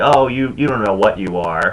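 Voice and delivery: ordinary talk, nothing marked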